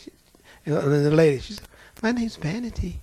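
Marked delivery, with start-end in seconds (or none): 2.0-3.0 sweet, demure-sounding voice. Retelling a demon speaking through a woman: imitating a sweet demure voice. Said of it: "She sounded just as sweet and demure".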